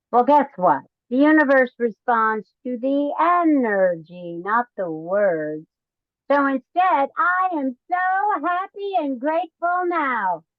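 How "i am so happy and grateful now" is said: joyful and playful, slow, lifted tone. Demonstrating how to say a gratitude affirmation to the universe, joyful and playful. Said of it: "say it in a joyful, playful way".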